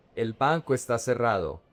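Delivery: ordinary talk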